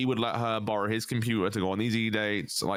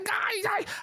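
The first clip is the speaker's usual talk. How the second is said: put-on high-pitched whiny voice, even higher. Imitating how Belushi usually sounds on stream: high-pitched whiny voice. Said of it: "really high pitch".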